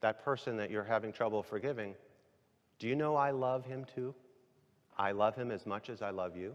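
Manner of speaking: quiet, soft, hushed half-whisper throughout. Retelling the Father's reply during prayer: retelling a half-whisper. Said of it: "in a whisper".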